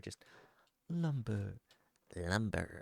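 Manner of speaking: eager, excited, hushed half-whisper. Game narrator voicing the others half-whispering to each other, excited half-whispering. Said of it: "the others sort of whispering to each other".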